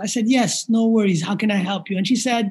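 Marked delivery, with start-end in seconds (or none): none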